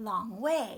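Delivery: "way" gets the heavy beat, hit hardest. Pronunciation drill on descriptive phrases, repeat after me: stress on way. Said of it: "we want to put the stress on the last word".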